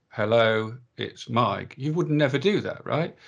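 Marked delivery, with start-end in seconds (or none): 0.2-1.8 lifeless, flat, wooden voice. A speaker shows answering the phone in a really wooden way. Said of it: "answer the phone in a really wooden way".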